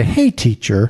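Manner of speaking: syrupy, dripping, patronizing, condescending tone. Echoing the Pharisees' greeting to Jesus: imitating condescending Pharisees. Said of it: "just condescending, dripping out of their mouth".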